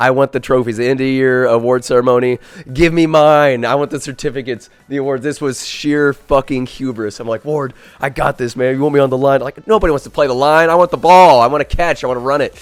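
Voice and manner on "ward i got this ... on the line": mock slimy, eager-to-please fawning tone. Retelling offering to play the line to win the award: imitating his own slimy eager-to-please pitch. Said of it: "it was so fucking pathetic".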